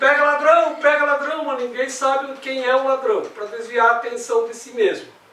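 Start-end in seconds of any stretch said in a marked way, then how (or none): 0.0-1.4 loud, higher-pitched group shout, all together. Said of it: "todo mundo grita junto".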